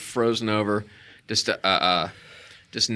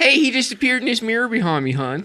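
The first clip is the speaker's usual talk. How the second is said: fake Baltimore accent, pitched very high; 13 semitones higher, 3 dB louder than usual. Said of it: "What is that accent?".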